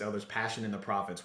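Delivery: normal talking voice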